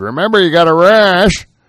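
put-on very high, old-fashioned screen-actor style delivery. Parent retelling what they told their kid at drop-off, in an old-timey actor voice. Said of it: "you went all like oldie timey actor there".

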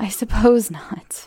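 words said through rueful laughter. Reading a story aloud, a character gives in to a point: rueful laugh. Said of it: "I laughed rather ruefully".

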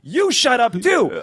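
high, slow, worked-up little guy's shout.

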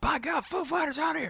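very high, full-throated scream. Retelling a reaction when a band came out: screaming like Jim Ross. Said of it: "I'm screaming like Jim Ross".

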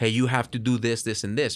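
ordinary talk

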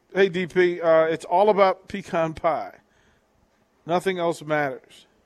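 ordinary delivery

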